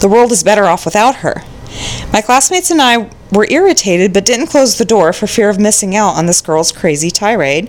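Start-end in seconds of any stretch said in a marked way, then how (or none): none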